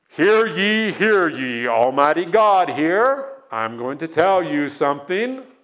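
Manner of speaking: put-on divine voice. Asking where God speaks to you audibly, then a mock voice of God. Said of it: "Y'all ever hear God like that?".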